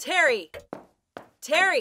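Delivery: calling out, repeated twice. Calling out for another character, shouting. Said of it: "Why are you shouting?".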